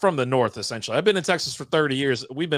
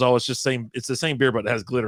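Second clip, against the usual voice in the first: ordinary talk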